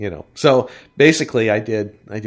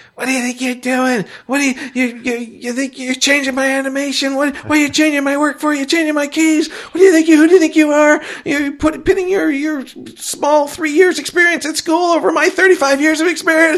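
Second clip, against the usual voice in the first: mock, very high-pitched, loud screaming; 5 dB louder than usual. Retelling how a colleague screamed at him in the studio: imitating Dick screaming. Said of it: "Dick starts screaming at me".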